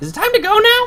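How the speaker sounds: sudden, very high, loud character voice.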